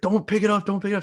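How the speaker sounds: high, urgent screaming voice. Retelling a friend screaming at his mom during the draft: imitating a friend screaming.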